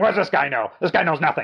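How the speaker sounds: worked-up, sputtering ranting and raving. Retelling a director reading a bad review at a Q and A: imitating someone ranting. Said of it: "just ranting and raving".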